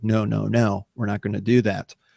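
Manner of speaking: ordinary delivery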